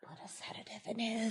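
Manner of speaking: whispering a little. Voicing a character during the game: whispering a little. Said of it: "whispers a little bit".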